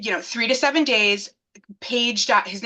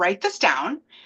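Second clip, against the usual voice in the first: ordinary talk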